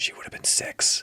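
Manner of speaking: quick quiet whisper. Retelling how a character delivers a line: imitating a quick quiet whisper. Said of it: "whispers the line".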